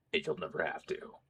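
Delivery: horrible, breathy, very quiet whispered hero voice. Repeating a line from a meme after a bad impression, do a horrible Batman impression. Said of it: "That's a sufficiently horrible Batman impression".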